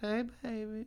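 very high, squeaky female voice. Behind her niece and nephew, the speaker answers the male's call: pretending to be the female. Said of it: "pretending to be the female".

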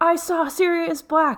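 very high, shrill, screeching scream. Imagining Arthur answering the phone, retelling a scream. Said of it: "screaming like".

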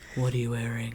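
put-on, erotic phone-sex line voice. Doing voices for a friend, joking about phone sex: put-on erotica voice. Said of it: "your erotica voice".

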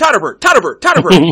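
rapid-fire speech. Acting out a dad with little english answering what his name is, very fast. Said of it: "he spoke really fast".

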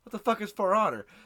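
ordinary talk

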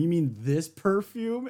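mock taunting, teasing tone. Retelling how Nami taunts Chopper with the perfume: imitating a taunt. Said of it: "taunting poor Chopper with the perfume".

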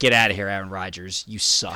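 mock snapping outburst. Recounting hitting a breaking point, retelling a snapped outburst. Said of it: "I snapped".

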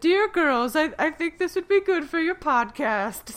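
very high and loud voice. Quoting their mother's reply on their podcast; imitating their mom's voice. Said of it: "mom voice".

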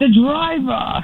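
very high-pitched, shouted call-out. Retelling how a man called him out in front of everyone: retelling a shout. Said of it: "He shouted".

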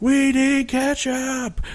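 mock high scream. Retelling another waiter's outburst as carolers arrived, retelling a scream. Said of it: "starts screaming".

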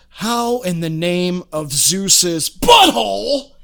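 very slow, sudden exploding outburst, every word dragged out. Retelling a favorite movie line from The Rock: imitating Nicolas Cage exploding. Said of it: "he blows up and he says".

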